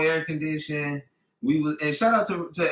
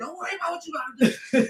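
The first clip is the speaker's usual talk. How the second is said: put-on whisper, higher; 13 semitones higher than usual. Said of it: "Why does he hit you with the whisper".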